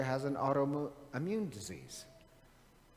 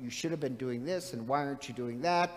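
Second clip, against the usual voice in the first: ordinary talk, nothing marked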